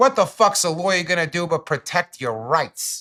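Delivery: put-on over-the-top, crazy, high New Jersey cop accent. Speaker quotes a cop who questioned him, in a crazy jersey accent. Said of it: "That crazy Jersey accent".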